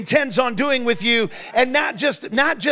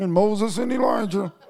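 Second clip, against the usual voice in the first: mock muttering under breath; 2 semitones lower than usual. Retelling what the men said on rejoining the other nine: imitating muttering under breath. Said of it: "under their breath".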